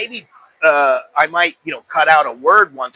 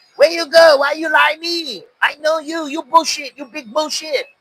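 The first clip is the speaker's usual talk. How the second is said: put-on very high-pitched broken English with Thai accent; 11 semitones higher than usual. Retelling a man speaking broken English to a girl, imitating Thai broken English. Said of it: "speaking like a Thai who speaks broken English".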